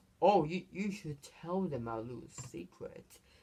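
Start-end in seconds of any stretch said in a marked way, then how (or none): none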